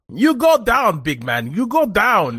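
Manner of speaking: put-on Malaysian-accented speech. Imagining Malaysian men on the boat yelling at him, in put-on Malaysian broken English. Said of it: "yelled at by a Malaysian man in broken English".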